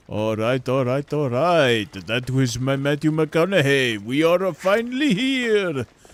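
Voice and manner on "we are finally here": put-on Italian plumber accent, slow and high-pitched. The speaker slips into a put-on voice again, Italian plumber accent. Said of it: "into an Italian plumber accent".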